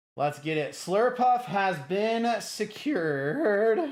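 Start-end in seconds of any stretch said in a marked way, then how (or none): 2.4-3.8 voice breaking, slow and drawn out. Streamer talking to viewers, voice cracking. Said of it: "My voice is cracking".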